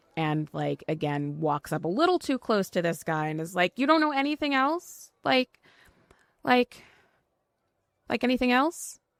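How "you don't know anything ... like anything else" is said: exasperated, discouraged, frustrated, pitched-up pleading. A player's character presses a man standing too close, frustrated and discouraged. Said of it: "getting like visibly frustrated and discouraged".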